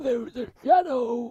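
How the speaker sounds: very high, creepy voice. Describing the film's doppelganger, the speaker shows how she talks: creepy Red voice. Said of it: "she talks like this".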